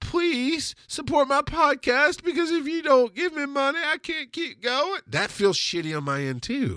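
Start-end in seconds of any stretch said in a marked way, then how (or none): 0.0-5.0 very high-pitched, humble, begging plea. Acting out a creator asking for podcast money: mock pleading, hat in hand. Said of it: "holding your hat in your hand going".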